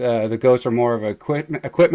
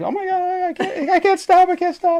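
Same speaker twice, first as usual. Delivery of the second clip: mock-panicked, flipping out, much higher pitch. Speaker retells a woman's first time driving a tractor, imitating someone panicking. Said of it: "She's flipping out".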